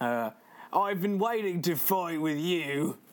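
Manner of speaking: put-on Australian accent. Voicing a line from the game, in Australian accent. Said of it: "which I'm going to try and do in my best Australian accent".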